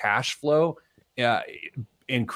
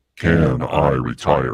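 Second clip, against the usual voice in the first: very deep, low, booming, ominous doom voice; 12 semitones lower, 5 dB louder than usual. Announcing a game segment title, second try: ominous voice. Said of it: "That's some very, very ominous".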